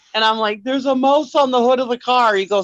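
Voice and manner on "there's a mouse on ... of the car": crying, words broken up by sobs. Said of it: "I'm just crying".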